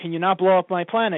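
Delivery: ordinary delivery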